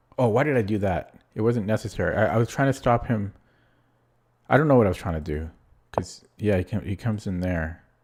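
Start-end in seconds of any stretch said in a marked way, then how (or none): 0.2-5.5 anxious, rattled, panicked, flustered self-reproaching voice. Reacting to a mistaken move in a chess game: panicking. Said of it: "I'm panicking".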